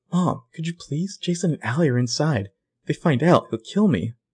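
put-on hushed voice. Retelling a character's argument on a porch: imitating a hushed voice. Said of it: "Charlotte's kinda trying to keep her voice down".

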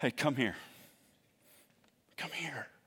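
gentle, kind, very hushed voice. A speaker voices Jesus calling out to the listeners; kind voice of Jesus. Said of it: "the kind voice of Jesus".

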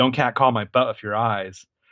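usual speaking voice

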